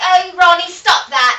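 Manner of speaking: put-on slow, stretched-out English accent, very high and loud. Retelling how Downtown Julie Brown used to talk: Downtown Julie Brown impression. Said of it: "she used to talk like this".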